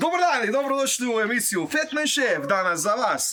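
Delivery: too pushy, over-the-top tone. Opening a cooking show, criticised for it: too pushy, over-the-top intro. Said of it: "kaj je tak napadno?".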